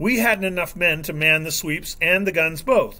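plain reading voice

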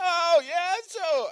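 put-on very high, cracking teenage kid voice. Retelling how he made fun of the kid, in a mocking cracking voice. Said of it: "doing like the cracking voice".

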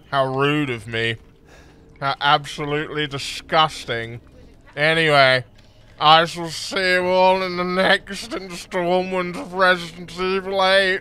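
speaking through a mouthful. Gamer doing a video outro for viewers, talking with mouth full. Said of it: "because I have a mouthful of Maltesers".

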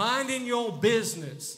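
put-on Southern twang. Explaining a verse about living a quiet life: southern twang. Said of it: "I said that with some southern twang on".

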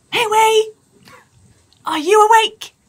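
loud, high-pitched stage whisper. A player's character pads down the hallway and knocks on Meue's door, stage whisper. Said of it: "kind of stage whisper".

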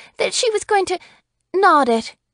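flustered, flurried, very high-pitched voice. The sheriff's wife answers the man's question in a flurried voice. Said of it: "in a flurried voice".

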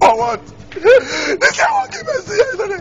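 crying, high-pitched wailing sob.

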